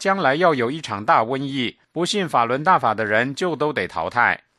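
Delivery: ordinary talk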